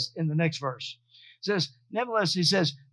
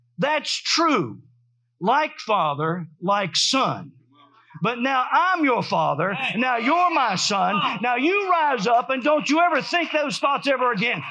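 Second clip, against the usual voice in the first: strong, authoritative, commanding voice, slower; 6 semitones higher, 4 dB louder than usual. Speaker recounts a voice that spoke while they were driving: retelling a strong, authoritative voice. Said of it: "very strong and authoritative and shook me".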